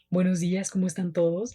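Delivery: very handsome, deep, smooth announcer voice.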